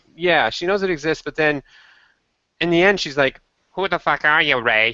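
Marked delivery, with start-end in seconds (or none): 3.7-5.0 put-on, fake Boston accent. Quoting a character's angry question from episode four: fake Boston accent. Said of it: "with her fake Boston accent".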